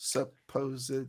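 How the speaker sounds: slow careful pronunciation. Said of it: "Have you tried saying it slow?".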